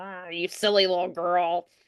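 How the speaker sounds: snide, snarky, grumbling, grumpy scolding tone. Coach showing the wrong way to start a scene, snarky and grumpy. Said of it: "starts it by being snarky and like".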